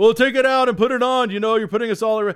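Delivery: shouting, loud and high. Retelling how people in a store line yelled at a young man: imitating people yelling. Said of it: "people started yelling at him".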